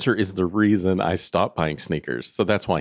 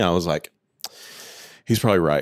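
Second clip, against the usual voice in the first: ordinary talk, nothing marked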